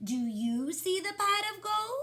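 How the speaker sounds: rising intonation at the end on gold. Showing the class how she read a story line: questioning intonation. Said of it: "I should have a question in my voice".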